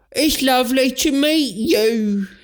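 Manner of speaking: put-on very high, prim, polite, proper English child voice. Mocking how Americans write English kids, the speaker does a mock proper English child. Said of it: "But they talk like proper".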